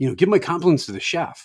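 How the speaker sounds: mock sincere enthusiasm. Retelling a coworker's compliments to a waiter: imitating a high-energy delivery. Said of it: "said it very high ener-, high energy".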